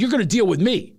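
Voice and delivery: put-on confrontational South Philly accent. Retelling what she said to a man, in a Philly accent. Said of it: "I got Philly on him".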